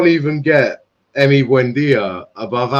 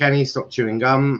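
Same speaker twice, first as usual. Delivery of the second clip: ordinary delivery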